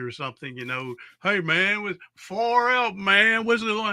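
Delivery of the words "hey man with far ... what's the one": put-on higher, drawn-out drunk homeless man voice. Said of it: "drunk homeless dude".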